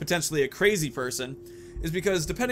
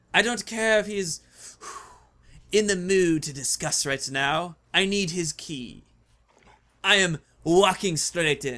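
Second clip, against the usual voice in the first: put-on odd mix of French and German accent, slower; 2 semitones higher than usual. Voicing a game character answering someone who refused help, weird French-German accent. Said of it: "a weird combination of French and German".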